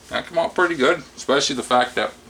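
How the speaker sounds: talking with mouth full. Tasting and reviewing a homemade loaf, talking with mouth full. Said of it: "chewing a mouthful, talking a mouthful".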